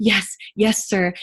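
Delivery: obsequious, eager, submissive people-pleasing tone. Showing the wrong way to nod along: submissive people-pleasing yes. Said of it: "where you're not going".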